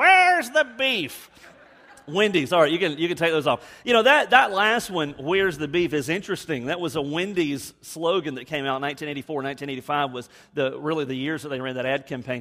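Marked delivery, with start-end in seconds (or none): 0.0-1.3 put-on high-pitched voice of a poor, frail-sounding old lady. Recalling a slogan from an old ad campaign for listeners, Wendy's ad lady voice. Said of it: "can you hear that poor lady's voice?".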